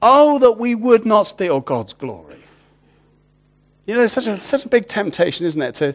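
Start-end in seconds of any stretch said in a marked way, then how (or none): 0.0-2.4 acted loud outcry, much higher pitch. Speaker retelling the story of a minister who cried out, retelling a loud cry. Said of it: "he cried out with a loud voice".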